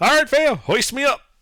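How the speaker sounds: loud, high-pitched yelling. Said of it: "Then I just yell up".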